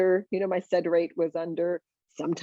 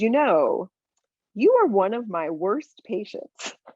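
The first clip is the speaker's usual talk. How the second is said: angry voice; 3 semitones higher than usual. Retelling what an angry doctor said on walking in: imitating an angry doctor. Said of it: "he was angry".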